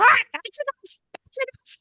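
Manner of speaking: tiny, very high little bird voice. Storyteller voicing a little bird on a character's shoulder, in its little voice. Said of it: "in his little little voice".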